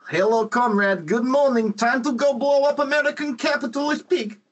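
put-on Russian accent. Imagining what the Russian version would say: mock Russian accent. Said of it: "doing the accent".

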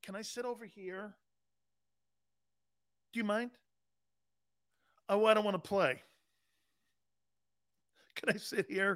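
thick, teasing, mocking football player caricature voice. Mocking a player who acts timid when facing Philadelphia: mocking Amari Cooper impression. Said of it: "he's like this?".

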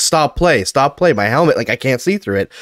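ordinary talk

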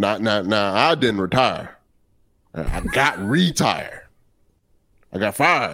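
put-on broadcaster voice. Quoting a retirement line on Foul Territory: Hawk Harrelson impression. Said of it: "you gonna do Hawk Harrelson's quote in Hawk Harrelson impersonation".

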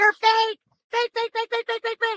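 very high, top-of-the-lungs screaming. Speaker retells a man walking out of the courtroom, imitating someone screaming. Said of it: "he was screaming at the top of his lungs".

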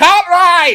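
shrill, very loud, blasted out high. Retelling a video of an actor quoting his Seinfeld episode: imitating James Hong. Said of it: "quoting, like, his Seinfeld episode".

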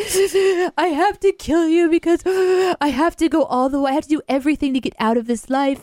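tearful crying. Describing a movie scene, acting out the woman holding the hero at gunpoint, imitating someone crying. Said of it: "she's like crying".

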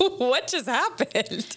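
high, slow, drawn-out stunned disbelief.

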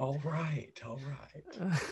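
very drawn-out, dropped voice. Reacting to a poll about Owen Wilson's character with an Owen Wilson impression. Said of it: "That was my best Owen Wilson".

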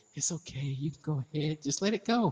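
soft coaxing voice. Retelling how she coaxed someone into doing something, put-on little soft voice. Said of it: "give them a little soft voice".

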